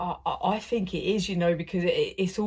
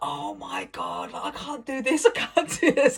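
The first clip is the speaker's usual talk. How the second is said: drawn-out, high, rising, panicked meltdown, acted out; 7 semitones higher than usual. Retelling own reaction to hearing news at work: imitating own past meltdown. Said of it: "Going into some stupid meltdown mode".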